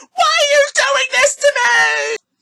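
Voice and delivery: acted very high, loud, frantic, distraught cry of despair. Speaker retelling a movie scene where a woman confronts the injured man, imitating a distraught outburst. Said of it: "she just totally loses all composure".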